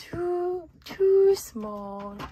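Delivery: put-on very high, sleepy, yawning little-girl voice. Recalling a little girl reading the Three Bears in Mary Poppins, imitating a yawning little girl. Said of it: "she's yawning and she's saying".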